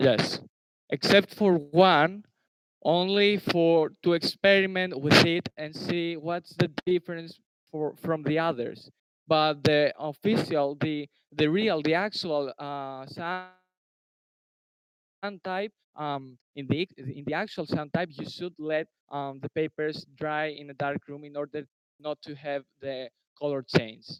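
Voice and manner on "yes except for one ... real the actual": much louder, projected voice. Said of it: "Can you please speak louder?".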